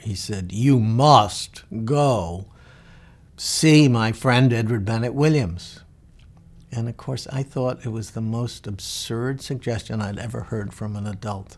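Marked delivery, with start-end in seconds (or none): 0.5-5.8 put-on very deep voice, louder and slower. Retelling what a Georgetown law professor said to you at dinner, imitating a deep, deep voice. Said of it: "in his Deep, deep voice I can still hear".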